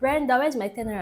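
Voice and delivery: high, loud screaming yell. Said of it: "And she just screams".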